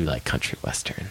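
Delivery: soft, hushed, voiceless whisper.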